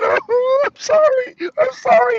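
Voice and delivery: very high, very slow, drawn-out, tearful sobbing. Recalling a tv episode, the speaker imitates customers crying with their bowls. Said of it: "they'd be crying".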